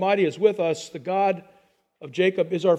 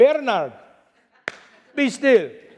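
put-on Italian accent; 4 semitones higher, 3 dB louder than usual. Quoting his mother calling him by his full name, in her italian voice. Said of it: "in her great italian voice".

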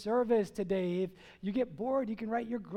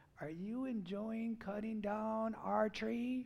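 grim, unfriendly, dark lord style voice; 8 dB quieter than usual. Retelling what a voice behind them asked: Darth Vader-like voice. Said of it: "It sounded more like Darth Vader talking to me".

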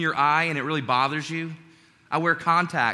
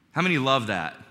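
sarcastic, lower pitch; 3 semitones lower than usual. Speaker asks the audience a question, sarcastic. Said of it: "obviously I'm being sarcastic".

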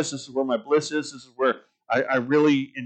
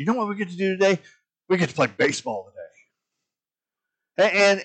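delighted, pitched-up, can't-believe-it joy; 5 semitones higher than usual. Retelling a minor-league player's words to his friend at the mirror, imitating a joyful voice. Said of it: "the joy in his voice".

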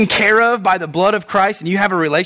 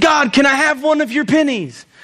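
acted, pitched-up, heavily sarcastic delivery; 5 semitones higher than usual. Retelling a joke about a man talking to god: imitating sarcastic tone. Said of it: "he's being highly sarcastic".

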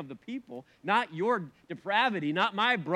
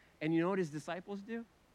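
ordinary talk

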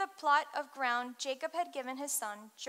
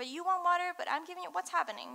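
acted, very confused voice, higher pitched; 4 semitones higher than usual. Retelling a scripture scene, acting out the woman: imitating someone super confused. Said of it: "I'm thinking she's super confused".

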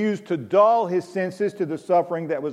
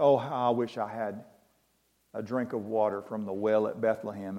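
imitated mutter under the breath, lower and quieter; 8 semitones lower, 8 dB quieter than usual. Quoting a thirsty king hiding from an army, almost under his breath. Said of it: "almost under his breath".

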